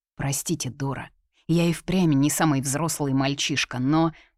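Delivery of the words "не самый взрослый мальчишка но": ordinary delivery, nothing marked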